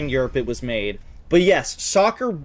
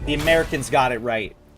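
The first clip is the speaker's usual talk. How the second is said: ordinary talk, nothing marked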